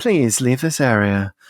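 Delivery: patronizing PA announcer voice, faintly menacing. Mocking future announcements over the tannoy: imitating a patronizing announcement with slight menace. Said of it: "with this slight menace in the voice".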